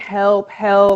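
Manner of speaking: put-on screaming, crying out at full pitch. Recounting being hit, the speaker acts out her past screams: retelling screams for help. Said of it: "I'm screaming".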